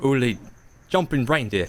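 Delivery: Aussie-sounding delivery. Reading a script line in a cast reading: australian accent. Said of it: "in an Australian accent".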